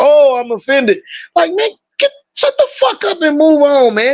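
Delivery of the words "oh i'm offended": mock offended whining, higher. Mocking how people react when offended: imitating offended people mockingly. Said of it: "'cause that's what people do".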